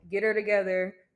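normal talking voice

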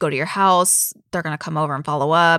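normal talking voice

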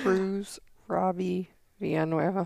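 soft, downcast, sad-sounding delivery. Co-host repeating the host's name back to him, mimicking a sad tone. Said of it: "your name sounded so sad".

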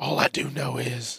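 slow creature voice. Ranting about the news, accidentally sounding like Gollum. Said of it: "I don't know why I sounded like Golem".

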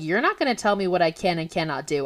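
ordinary talk, nothing marked

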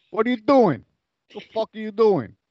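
a bit of swooping put-on Italian accent. Retelling how he messed with a gang guy, in a put-on Italian accent. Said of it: "I was using my Italian voice a little bit".

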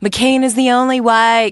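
put-on Southern accent. Retelling what a boyfriend said at a rally: imitating his southern accent. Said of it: "when you have a Southern accent".

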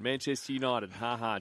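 ordinary delivery

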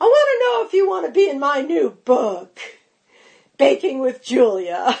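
big, loud, swooping delivery. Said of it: "everybody knows that voice".

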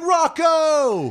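very high, long-held, drawn-out yell. Quoting a movie character calling a name: imitating a yell. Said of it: "Unless they're yelling".

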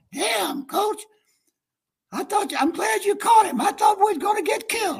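scratchy, raspy, very high-pitched voice. Retell what Orr said to his coach on recognizing him, in Orr's raspy voice. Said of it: "Orr says in that raspy voice".

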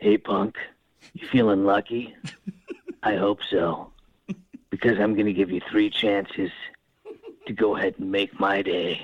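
intimidating, tough tough-guy voice. Speaker shows off his impression, imagining a dark alley confrontation: Clint Eastwood impression. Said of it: "a really good Clint Eastwood impression".

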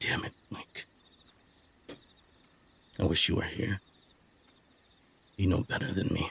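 huffy, whispered mutter under the breath. A narrator voices a character hammering at his forge; muttering to himself. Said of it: "And he's muttering to himself".

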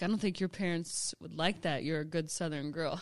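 ordinary talk, nothing marked

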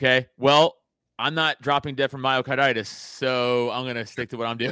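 ordinary talk

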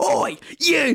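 mock, very high-pitched teacher's shout. Retelling a teacher catching kids running off: imitating a teacher shouting. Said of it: "She's shouting like".

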